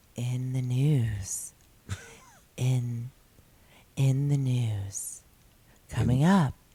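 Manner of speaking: sultry voice. Saying the segment title after viewers asked for it: sultry voice. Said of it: "Say it sultry".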